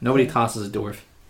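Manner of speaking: ordinary talk, nothing marked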